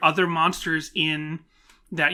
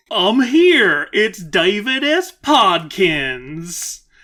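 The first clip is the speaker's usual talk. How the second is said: loud, faintly southern character voice; 3 semitones higher, 6 dB louder than usual. A new guest arrives and introduces himself, slightly southern David S. Podkins voice. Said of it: "Slightly more southern voice".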